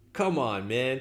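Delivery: loud and excited. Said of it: "I'm being a little loud here because I'm getting excited".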